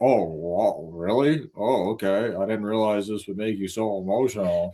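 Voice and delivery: mock lifeless, flat, corpse-like dead tone. Retelling how he spoke to her: imitating a lifeless dead-body tone. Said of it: "He was like a dead, dead body talking to her".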